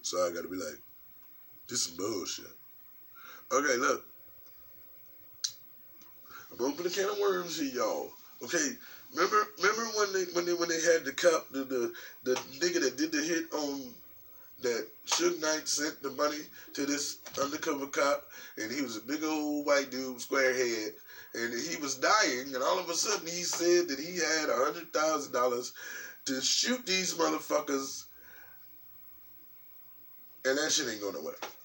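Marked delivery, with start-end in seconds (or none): 1.7-2.6 lower, soft, serious voice. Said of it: "y'all will not hear my girl voice in this video, 'cause this is serious".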